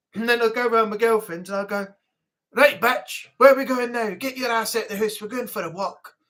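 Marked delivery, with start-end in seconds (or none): 2.6-6.1 put-on plain speech in a Scottish accent. Retelling how they talked to a girlfriend who hated it: Scottish accent. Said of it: "will you not talk to me in Scottish".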